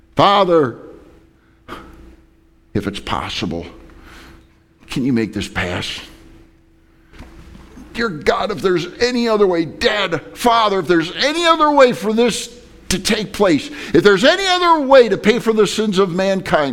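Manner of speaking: put-on anguished, swooping, desperate pleading. Retelling a prayer in absolute agony, acting out Jesus begging. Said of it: "He's begging him".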